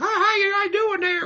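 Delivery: very high voice, as if through a megaphone. Retelling a wrestling promo, speaking as if through a megaphone: Steven Richards megaphone voice. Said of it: "I'm not doing a megaphone voice for this entire promo".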